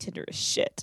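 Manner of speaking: put-on muttering under the breath. Retelling what a woman muttered when bothered by someone, imitating muttering under her breath. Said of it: "she like mutters under her breath like".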